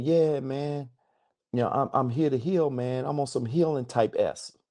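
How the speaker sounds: mocking young voice. Retelling a call with a young client, mocking the client. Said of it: "I'm gonna try to mock him a little bit".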